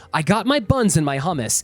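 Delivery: plain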